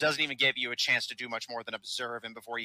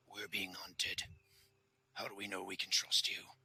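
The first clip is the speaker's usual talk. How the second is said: low, very quiet orc-like growl under the breath; 4 semitones lower, 12 dB quieter than usual. A narrator voices an orc piping up to the listener: low orc growl. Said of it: "the orc pipes up in a low growl".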